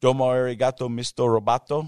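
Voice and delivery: put-on Spanish accent.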